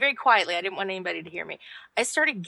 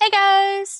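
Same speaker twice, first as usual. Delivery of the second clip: squealed, very high and loud; 12 semitones higher, 8 dB louder than usual. A podcast guest greeting the hosts after being introduced, higher-pitched than usual. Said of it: "that's higher than usual".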